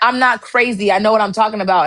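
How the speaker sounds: ordinary talk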